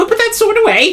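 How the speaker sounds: panicked pleading. Narrator voices a halfling proprietress running after an armed customer, panicked pleading halfling proprietress. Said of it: "running after him and saying".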